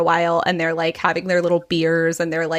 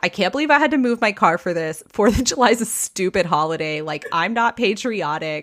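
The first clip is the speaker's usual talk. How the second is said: mock grouchy, cranky grumbling; 2 semitones higher than usual. Retelling a neighbor's complaints about moving his car: imitating Eugene, cranky. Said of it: "he's so cranky".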